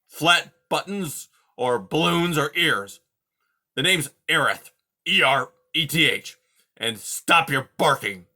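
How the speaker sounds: loud, grumpy, growling voice. Reading a story aloud, voicing the beast introducing himself to Poppy: growling Aerith voice. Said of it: "waking an old coot like me in the middle of the day and asking for my help. / waking an old coot like me in the middle of the day and asking for my help. / He growled. / waking an old coot like me in".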